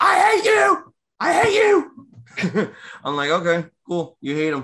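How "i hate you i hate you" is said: very high, very slow, drawn-out angry scream. Recapping a match, retelling Sheamus rolling out of the ring screaming. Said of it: "he's screaming at Damian Priest".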